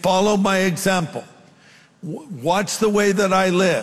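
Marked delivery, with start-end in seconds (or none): 0.0-1.2 follow stressed, lifted a little higher. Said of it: "So we should say".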